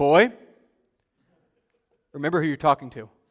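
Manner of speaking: booming, very loud, firm fatherly tone. Speaker recalling his dad's words to him as a mouthy teenager: imitating dad's firm deep voice. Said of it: "my dad saying with a firm, deep voice".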